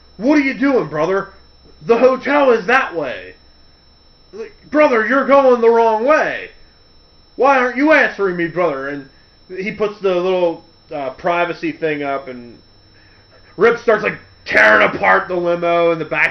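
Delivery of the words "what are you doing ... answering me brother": hammy, overacted line reading like a bad actor. Speaker retells a scene where Hulk Hogan questions the limo driver, Hulk Hogan's 'best acting'. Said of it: "in his best acting".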